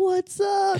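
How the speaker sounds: bright, peppy tone. Describing arriving after drinking coffee for energy: imitating an energized greeting. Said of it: "get the energy".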